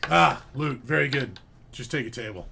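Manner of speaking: oddly deep gnome voice. Voicing a gnome greeting guests who ask for rooms, oddly deep gnome voice. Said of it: "he's got like an oddly deep voice for a gnome".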